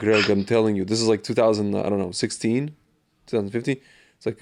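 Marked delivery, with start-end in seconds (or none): none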